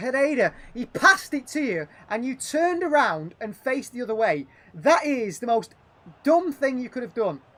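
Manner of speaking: exasperated ranting. Scolding a player for turning away from a pass: frustrated. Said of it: "So frustrating".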